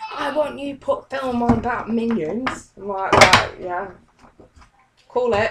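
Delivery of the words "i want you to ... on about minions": put-on high, pushy, aggressive, insistent child-like voice. Retelling how her son Charlie ran up to her demanding something, imitating Charlie's aggressive demand. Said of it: "He's like so aggressive when he said it".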